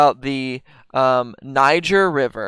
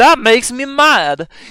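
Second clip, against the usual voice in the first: very high, slow, drawn-out voice; 10 semitones higher, 4 dB louder than usual. Retelling how Chris D'Elia talks in his stand-up: imitating Chris D'Elia's stand-up voice. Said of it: "It's literally how he talks in stand-up".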